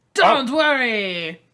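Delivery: deep man's voice. Reading the Panther role aloud in a group reading: deep man voice. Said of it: "in my deep voice that I am a deep man voice".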